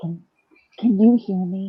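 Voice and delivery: put-on serious whisper. Retelling how mom talks on calls: imitating a serious whisper. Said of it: "she'll get so serious and she'll whisper".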